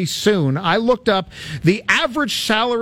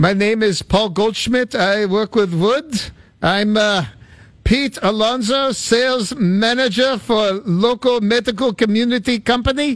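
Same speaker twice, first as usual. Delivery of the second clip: horribly done, put-on Czech accent; 3 semitones higher than usual. Right after others introduce themselves, the speaker does a horrible Czech impersonation. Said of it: "that was a horrible Czech impersonation".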